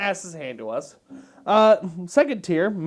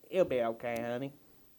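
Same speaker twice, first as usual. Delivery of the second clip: put-on sweet, hushed, soft, low southern old-lady voice; 7 semitones lower, 11 dB quieter than usual. Co-host describing the voice that would say this: wholesome old southern woman voice. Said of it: "wholesome old woman with a southern accent saying".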